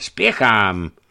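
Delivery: sharp, curt, commanding, domineering outcry. The pilgrim refuses to wait for the man, a curt, domineering cry. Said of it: "vykřikl poutník a jeho hlas zněl nyní stroze a pánovitě".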